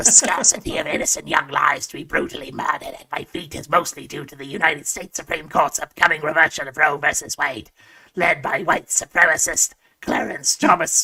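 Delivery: rough, scratchy, raspy smoker voice. Voicing the god of hedonism in a story, as listeners asked, in a scratchy smoker voice. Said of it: "I'll do this in the scratchy smoker voice".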